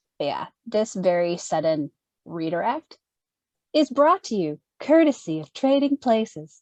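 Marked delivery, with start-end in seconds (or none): 3.7-6.4 ad announcer commercial voice. Speaker jokes about a sudden change of topic: announcer commercial voice. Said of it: "How'd you like my, uh, commercial voice?".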